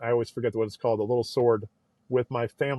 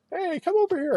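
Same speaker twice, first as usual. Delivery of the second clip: play-acted, very high, shrill girlish screech. Retelling girls at a bar calling to come over: imitating girls screaming. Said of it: "girls at a bar that are screaming at me to come over".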